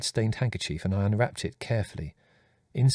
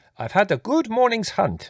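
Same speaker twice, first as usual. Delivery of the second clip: very high, loud, beaming with pride; 12 semitones higher, 5 dB louder than usual. Reading a man pointing to his bulging game bag; proud. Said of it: "he said proudly".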